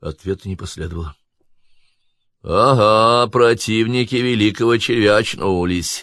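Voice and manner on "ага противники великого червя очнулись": slow, derisive, mocking tone, "ага" drawn out. Someone in the darkness addresses the bound captives, mocking. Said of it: "насмешливо отметил кто-то в темноте".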